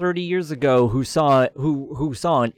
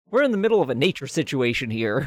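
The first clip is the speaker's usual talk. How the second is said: ordinary talk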